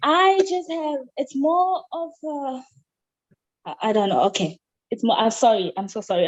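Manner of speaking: nervous, flustered, panicky, stumbling over the words. Given the floor on a call, a participant stumbles over a question, panicking. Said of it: "I'm panicking".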